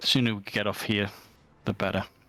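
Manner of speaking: speaking very quietly. Speaking in character to Klim beside corpses, speaking very quietly. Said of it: "I'll say that very quietly to Klim".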